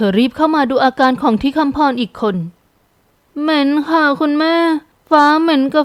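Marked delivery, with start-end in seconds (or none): 3.4-5.9 faint, limp, weak, feeble little voice. Narrator reads a daughter answering her mother, in a weak, feeble voice. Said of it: "เธอพูดเสียงอ่อยๆตอบบุพการี".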